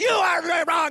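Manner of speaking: German accent computer voice, shouted very high. Explaining why they chose an australian computer voice, the speaker mimics a german computer voice. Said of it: "I don't want a German voice".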